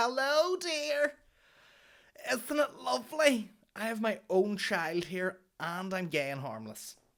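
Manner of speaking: exaggerated camp voice, very high and swooping. Walking along and spotting an old woman with her Shih Tzu: exaggerated camp voice. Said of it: "turning into like super camp".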